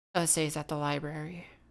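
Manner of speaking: grave, dead-serious, deathly serious delivery. Voicing Mary, who pulls a player outside to talk: deathly serious. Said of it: "deathly serious, and she goes".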